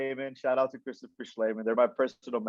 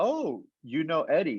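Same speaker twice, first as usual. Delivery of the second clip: ordinary delivery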